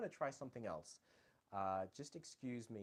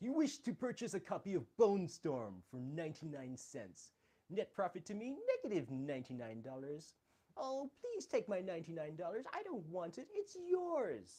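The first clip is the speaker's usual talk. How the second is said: nerdy voice, high, swooping and sing-song; 9 semitones higher, 6 dB louder than usual. Speaker shows off impressions he can do, performing Comic Book Guy voice. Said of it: "the nerdy beard guy".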